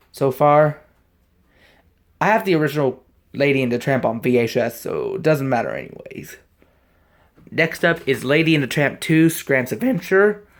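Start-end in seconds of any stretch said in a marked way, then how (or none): 9.3-10.3 breaking, cracking voice mid-line. Going through a list of movies on tape, voice cracking. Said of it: "Sorry for the voice crack here".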